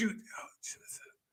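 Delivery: soft, unvoiced, hushed whisper under the breath. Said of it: "That's a whisper".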